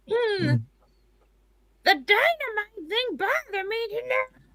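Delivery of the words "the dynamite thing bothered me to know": grumbling put-on cartoon mother voice. Host talking to a co-host on stream, doing a Marge voice. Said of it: "I don't know why I'm doing a Marge voice".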